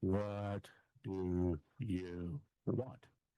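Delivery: very slow, deliberate, words drawn out. Retelling repeating a question to people who wouldn't answer it: deliberately slowed-down voice. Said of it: "I would slow my voice down".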